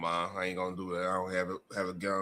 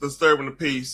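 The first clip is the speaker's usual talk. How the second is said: plain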